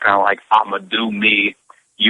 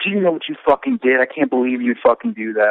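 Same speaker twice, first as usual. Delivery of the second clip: play-acted, furious, screaming angry tirade; 4 semitones higher than usual. Retelling a phone call from an agent: imitating someone screaming. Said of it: "just started screaming at me".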